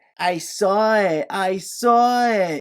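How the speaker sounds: loud, high whining, very slow and drawn out. Quoting an actress's line from a film scene, imitating Kristen Davis's whiny voice. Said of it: "in this incredibly whiny voice".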